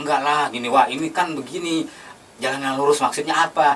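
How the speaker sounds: ordinary talk, nothing marked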